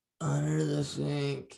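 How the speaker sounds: weak, barely-there words in a very low, faint voice. Retelling a scene where a barely conscious character answers: imitating a very low voice. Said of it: "it's so low voice".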